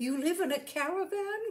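delighted outcry. On learning the man lives in a caravan, she cries out, delighted. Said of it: "cried Rosie, delighted".

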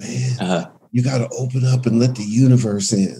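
slight rasp on every word. Quoting how a man used to talk, the speaker does a slightly raspy impression of him. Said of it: "he would talk with a little bit of a raspy voice".

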